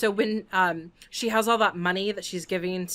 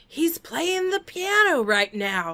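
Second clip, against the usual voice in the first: put-on loud, slow, pitched-up, carrying voice; 8 semitones higher, 3 dB louder than usual. Recounting what a person in the theater said, retelling a loud remark. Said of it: "really loudly".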